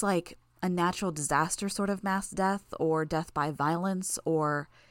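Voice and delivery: plain reading voice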